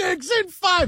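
high-pitched yelling.

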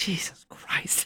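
said under the breath. Retelling what they said to themselves as she hung it up, muttered quietly. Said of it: "I said it quietly to myself".

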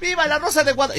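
put-on fervent, impassioned voice of a boy.

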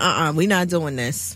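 low, soft, serious, stern tone. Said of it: "once I get all serious".

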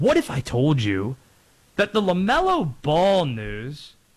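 put-on documentary narrator voice, swooping and dramatic. Recapping the 2-2 United States–Turkey match, then 30 for 30 narrator voice. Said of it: "got my 30 for 30 voice on".

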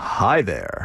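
smooth, sweet-toned, silky voice. Asked on the radio to say hello to listeners, a guest greets them in a smooth dulcet voice. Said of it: "say something smooth with his dulcet tones".

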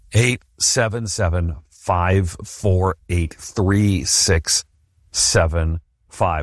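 slow, slowly delivered speech. Repeating a phone number for listeners after the fast version: slow delivery. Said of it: "Here's the slow version".

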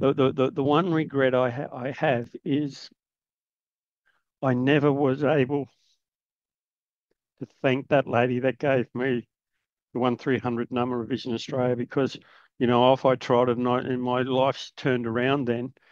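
choked up with emotion, words stumbling and tripping over themselves. Telling of never thanking a lady who gave a phone number: getting emotional. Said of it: "I'm getting emotional again".

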